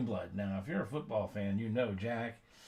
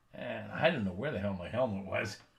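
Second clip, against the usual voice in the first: normal talking voice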